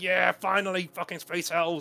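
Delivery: acted, high, gloating, in-your-face taunting jeer. Retelling an opponent shaking his fist in the speaker's face: imitating a taunting opponent. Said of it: "shaking his fist in my face, going".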